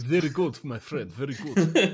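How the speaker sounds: ridiculous, exaggerated, put-on Romanian accent. Told he'd make a bad Soviet narrator, he tries a ridiculous Romanian accent. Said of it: "That's a Romanian accent".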